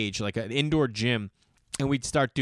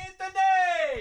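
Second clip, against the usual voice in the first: put-on old lady yelling voice, higher pitch. Retelling a spaghetti commercial with an old lady at a window: imitating an old lady yelling. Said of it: "this old lady yelling out the window".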